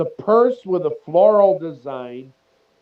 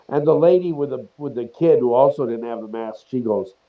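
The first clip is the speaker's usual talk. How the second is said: usual speaking voice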